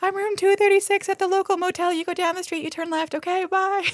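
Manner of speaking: very high-pitched, shrill shout. Retelling how a character shouted directions to his motel: imitating someone shouting. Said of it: "is shouting at her".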